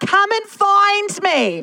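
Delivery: put-on child's voice, yelling, high-pitched and drawn out.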